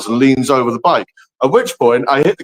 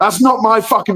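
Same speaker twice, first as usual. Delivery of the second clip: play-acted really angry, high-pitched yelling; 7 semitones higher than usual. Retelling yelling at police who slammed a guy into a wall, reenacting the yell. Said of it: "And I start yelling at them".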